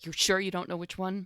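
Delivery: hushed, half-whispered stage whisper. Asking a little imp in character, half-whispering. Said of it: "I'm gonna whisper again to this little imp".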